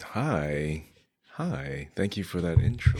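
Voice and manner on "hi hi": very slow, soft, mopey delivery. Greeting the host after a flattering introduction, very slow hi. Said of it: "That was like the slowest Winnie the Pooh hi".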